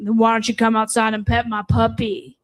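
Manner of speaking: put-on grown man's voice. Retelling a phone call from a stranger: imitating a grown man's voice. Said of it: "the voice turned to a grown man's voice".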